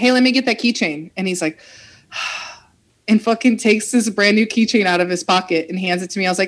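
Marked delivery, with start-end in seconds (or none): 0.0-1.1 bright, friendly, cheerful and happy voice. Speaker recounts asking a man for a keychain, retelling it in a happy way. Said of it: "saying it in like a happy way".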